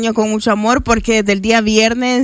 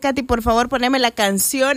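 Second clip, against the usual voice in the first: normal talking voice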